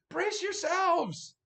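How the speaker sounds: shrill, very loud, high, urgent shout. Game master voices the mage as a branch flies toward the players, mage yelling. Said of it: "you hear the mage yelling".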